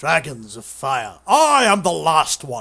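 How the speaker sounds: loud, very slow, every word drawn out, grand. Speaker playing Fear reads a line aloud, Sean Connery impression. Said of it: "Shut up, Sean Connery".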